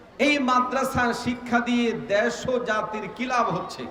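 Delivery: plain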